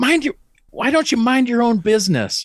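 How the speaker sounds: mock, very high-pitched, furious, enraged snap. Retelling a stranger's reply in a waiting room: imitating a woman's rage. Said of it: "she immediately just went right to rage".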